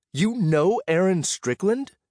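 amazed wonder, awestruck, pitched very high. A narrator reads a companion's question at the door, awestruck. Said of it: "say in an awestruck voice".

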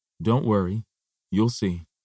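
plain

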